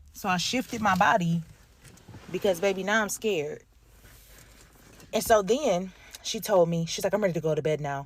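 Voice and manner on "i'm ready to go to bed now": put-on flat, emotionless tone, lower. Retelling what an elderly woman said at bedtime: imitating a blank, emotionless voice. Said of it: "with such a blank face. There was zero emotion".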